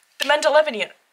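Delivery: said too fast. Naming a tarot deck being shown: said too fast. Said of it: "I said that too fast".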